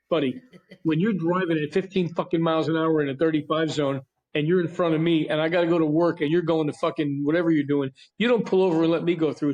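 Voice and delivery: normal talking voice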